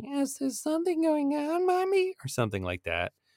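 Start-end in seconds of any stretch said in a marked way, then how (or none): 0.0-2.1 put-on very high, eerie, nightmarish little boy voice. Retelling a scene where a little boy in a room speaks: nightmarish little boy voice. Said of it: "nightmarish little boy voice is like".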